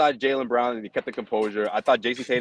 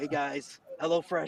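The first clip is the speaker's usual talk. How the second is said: put-on quiet, hidden-away voice, higher and quieter; 4 semitones higher, 9 dB quieter than usual. Mocking John in the TV booth for talking like he's hiding: imitating John's quiet voice. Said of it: "talking as if you're, like, hiding out somewhere".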